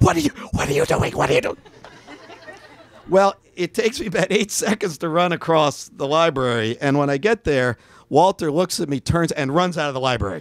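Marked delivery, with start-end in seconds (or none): 0.0-1.6 mock loud stage whisper. Retelling a librarian running around the desk to ask, retelling a loud whisper. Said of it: "He's like whispering loud".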